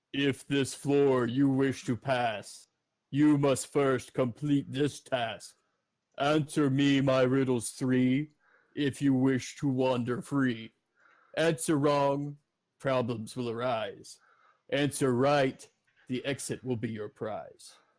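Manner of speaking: declaiming in verse, pronouncing voice. Running a game for the players, the speaker voices the keeper in a low booming voice. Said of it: "you start to hear this low booming voice".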